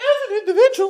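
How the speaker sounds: cracking voice, very high and loud. Posing a question about a story character, voice cracking mid-sentence. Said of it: "my voice is cracking".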